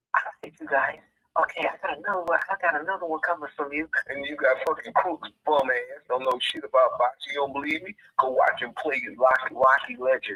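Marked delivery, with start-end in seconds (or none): 0.2-3.9 hushed, kept-down stage half-whisper. Mocking someone who films from a small room: imitating someone half-whispering. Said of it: "Fucking whispering".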